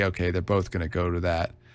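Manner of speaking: plain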